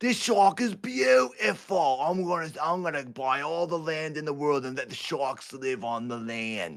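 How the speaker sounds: put-on Australian accent. Playing a shark-loving character in a put-on Australian accent. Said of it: "That's my Australian accent".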